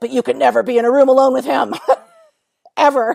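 loud, almost devil-like voice. Retelling their own past remark to someone, almost in a devil voice. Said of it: "almost like this devil voice".

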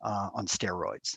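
ordinary talk, nothing marked

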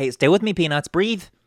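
supportive coaxing. Retelling someone switching back to a softer approach, imitating someone being helpful. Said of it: "And then switches back to helpful".

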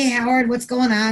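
ordinary talk, nothing marked

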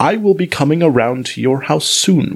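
ordinary delivery

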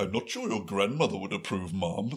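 polite, humble, deferential manservant voice. Imagining a butler's reply to his employers, imitating Jeeves the butler. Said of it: "I'm holding my hand like I'm a servant".

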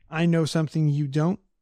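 ordinary talk, nothing marked

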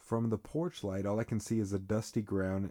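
ordinary delivery, nothing marked

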